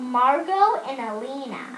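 plain reading voice

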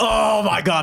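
hyped, excited exclamation.

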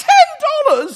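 booming, shrill, very loud, high-pitched shocked English outburst. Retelling a shocked young man at an American bar, retold loud, high English-accent exclamation. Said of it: "he very loudly goes".

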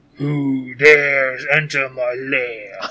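low, harsh, grating, grinding rumble. Game master voicing a being in its lair, low grating voice. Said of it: "just grating voice".

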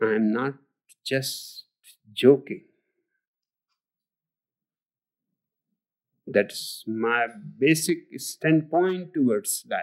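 very slow, lulling, deliberate, hypnotic cadence. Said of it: "He talks so slowly".

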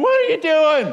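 loud, high shout from a crowd. Retelling a scene of overturned tables and scattering animals; imitating people yelling. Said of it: "People are yelling".

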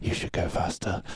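hushed, whispered voice. Acting out a commander urging someone on: imitating a whisper. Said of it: "he's just whispering in motherfucker's ear".

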